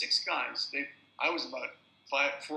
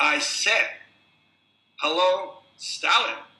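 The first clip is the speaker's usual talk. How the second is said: very loud, very slow, pointed delivery; 5 semitones higher, 11 dB louder than usual. Retelling a man's words that quieted the whole room, retelling a very loud voice. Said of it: "he said in a very loud voice".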